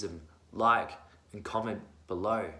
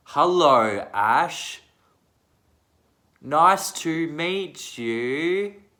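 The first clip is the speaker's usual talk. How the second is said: mock patronizing tone, higher and louder; 6 semitones higher, 8 dB louder than usual. Retelling how people greet the speaker: imitating someone talking down. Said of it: "talk like this when you're talking to me".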